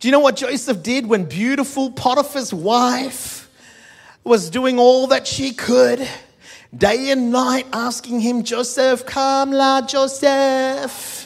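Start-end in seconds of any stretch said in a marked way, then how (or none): 8.4-11.3 put-on Filipino accent, very slow and drawn-out. Speaker acting out Potiphar's wife calling to Joseph: Filipino accent. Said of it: "That's my best Filipino accent".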